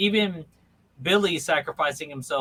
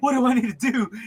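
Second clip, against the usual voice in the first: mock, very high, frantic, freaked-out voice; 9 semitones higher, 4 dB louder than usual. Retelling a funny scene where a character is freaking out: imitating someone freaking out. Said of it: "he's freaking out".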